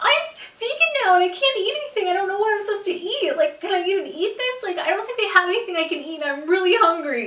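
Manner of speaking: play-acted, high, loud, full-on tearful blubbering. Retelling answering Travis's question while crying: retelling ugly crying. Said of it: "full on like crying".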